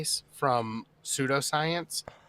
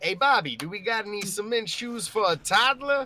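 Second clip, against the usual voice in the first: terrible, clumsy fake New York accent, pitched high; 6 semitones higher than usual. Joking around after a fish pun, a terrible New York accent. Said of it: "Excuse my terrible New York accent".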